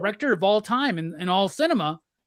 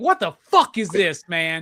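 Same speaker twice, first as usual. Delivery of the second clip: acted angry, fed-up, pissed-off outburst; 3 semitones lower, 4 dB louder than usual. Retelling own reaction to watching a movie: own pissed-off reaction retold. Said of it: "I was so pissed off, dude".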